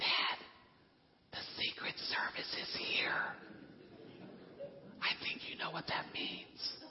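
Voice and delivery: hushed, very quiet whisper. Retelling a daughter's phone call back to him: imitating a whisper. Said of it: "she answers the phone whispering".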